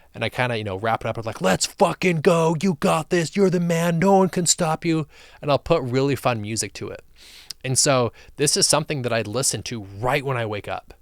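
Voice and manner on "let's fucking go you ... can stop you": intense, fired-up hype voice, loud and high. Reenacting a recorded self-hype mixtape: reenacting own intense hype voice. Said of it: "a really intense voice".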